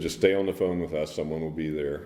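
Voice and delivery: ordinary talk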